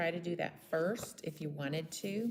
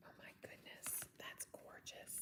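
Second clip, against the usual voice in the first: whispered, hushed, very quiet. Admiring the work before finishing it with one simple bow, whispering. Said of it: "I don't know why I'm whispering".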